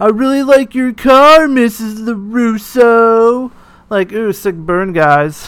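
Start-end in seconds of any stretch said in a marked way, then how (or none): 0.0-3.5 put-on, loud, high, taunting, jeering shout. Retelling what the departing car's passengers shouted: imitating someone shouting. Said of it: "they're shouting".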